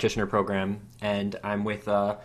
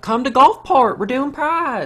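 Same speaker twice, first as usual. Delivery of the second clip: put-on old lady voice, higher and louder; 10 dB louder than usual. Retelling what the office lady said, imitating the office lady. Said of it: "is that what she sounds like?".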